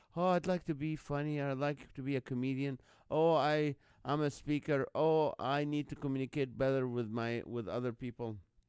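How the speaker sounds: ordinary talk, nothing marked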